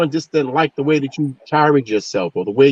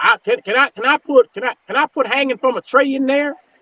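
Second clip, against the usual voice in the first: very high, put-on southern drawl, stumbling; 12 semitones higher than usual. Speaker quotes a man's idiotic statement, in his southern drawl. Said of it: "in his southern drawl".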